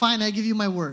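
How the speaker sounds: plain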